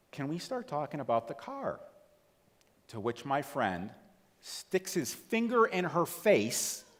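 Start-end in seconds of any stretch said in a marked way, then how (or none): 0.1-1.8 really sweet, gentle, nice tone, pitched up. Retelling what a fourth grade teacher asked about the car; imitating a sweet, nice tone. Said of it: "really nicely, really sweet tone of voice".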